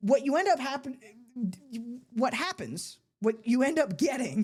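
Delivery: stumbling, stuttering speech with restarts. Making an argument, stuttering over words. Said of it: "I'm stuttering over my words".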